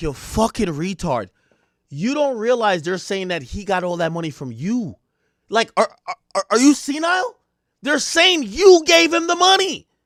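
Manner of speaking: mock fed-up, disbelieving, exasperated scolding rant. Reacting to a clip, acting out what the lawyer seems to think: imitating the lawyer, exasperated. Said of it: "the lawyer's looking at him like".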